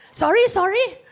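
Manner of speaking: normal talking voice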